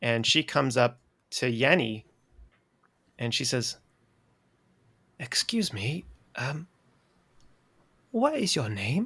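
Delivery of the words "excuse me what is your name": put-on polite, soft, sing-song elderly woman voice. Voicing an older halfling woman who comes up to Yenny: older halfling woman voice. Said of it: "she's an older halfling woman".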